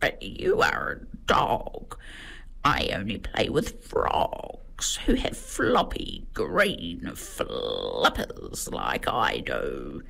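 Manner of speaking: soft, croaky, croaking frog character voice. A narrator reading a picture book voices the frog answering Milo: croaking frog voice. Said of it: "she croaks".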